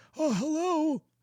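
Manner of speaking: put-on creepy old man voice, very high. Showing a voice the wrestler thankfully doesn't have: put-on creepy grandpa voice. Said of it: "that creepy grandpa voice".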